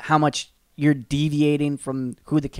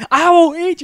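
mock furious screaming, very high-pitched and loud; 14 semitones higher, 7 dB louder than usual. Talking about King Shark smelling blood, the speaker acts out his outburst: imitating King Shark's angry scream. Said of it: "just starts like screaming curse words".

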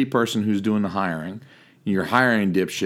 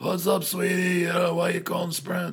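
sweet-sounding, very heavy smoker voice; 9 semitones higher, 5 dB quieter than usual. Retelling a call with a lady at Sprint, imitating a heavy smoker's voice. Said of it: "she sounded like a fucking three pack a day smoker".

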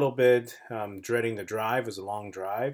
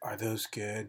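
soft, creepy, hushed half-whisper, barely there; 8 dB quieter than usual. Retelling what a creepy guy asked from behind: imitating a half-whisper.

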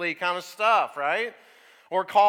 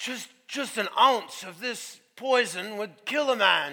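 put-on Australian accent. Retelling how a TV crocodile hunter talked about poison: imitating Steve Irwin's Australian accent. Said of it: "his accent was way better than mine".

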